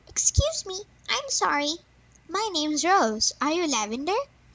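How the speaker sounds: tiny, squeaky little fairy voice. Reading a story aloud, voicing a little fairy asking for Lavender: squeaky little fairy voice. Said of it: "the little fairy squeaked".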